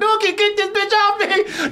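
mock very high-pitched shrill screaming. Acting out what he started yelling, retelling a yell. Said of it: "He start yelling".

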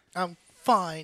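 sassy, tossed-off tone. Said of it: "She sounded so sassy with it".

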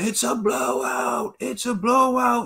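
very high, drawn-out ringside yelling. Retelling how a fighter's dad yelled during a fight: imitating someone yelling. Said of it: "Teo's dad started yelling".

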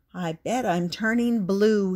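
ordinary delivery

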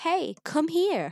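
put-on very high little kid's voice, calling out. Retelling hearing a voice call out at a car park entrance: little kid's voice. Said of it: "like a little kid's voice saying".

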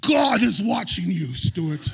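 very loud, thundering, booming oratorical bellow. Retelling a preacher calling out the speaker at the aisle: retelling the loudest voice. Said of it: "he goes in the loudest voice I've ever said".

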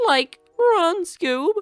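goofy cartoon slacker voice, very high and loud. Playing a game, a player notices his voice and slips into a Shaggy voice. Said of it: "Why do I sound like Shaggy Dude?".

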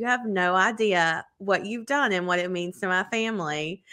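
usual speaking voice

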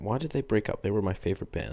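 put-on teen girl vlogger voice. Speaker doing a bit, in a 12-13 year old girl vlogger voice. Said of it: "That's my impression of a 12 to 13 year old girl with a vlog channel".

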